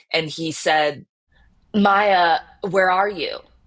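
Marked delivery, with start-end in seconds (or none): 1.7-3.3 voice cracked and breaking throughout. Retelling a father's phone call, imitating a cracked voice. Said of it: "his voice was, like, cracked on the phone".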